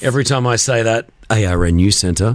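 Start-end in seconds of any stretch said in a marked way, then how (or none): 1.3-2.4 very low, deep radio-announcer voice. Saying the news centre's name the way it has to be said: deep voice. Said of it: "I have to say it with that deep voice".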